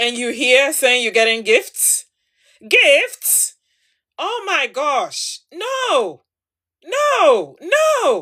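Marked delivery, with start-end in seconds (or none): 5.5-8.2 every "no" hit hard and weighted. Advising a listener about someone who disrespects them: heavy emphasis on no. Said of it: "I'm really emphasizing on the word no".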